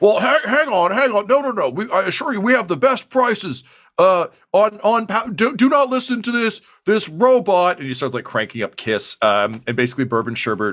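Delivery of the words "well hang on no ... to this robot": megaphone voice, much higher, much slower. The guy back on his podium speaks through his megaphone to wandering customers. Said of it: "Suddenly the guy crawls back up on his little podium. He pulls out his megaphone".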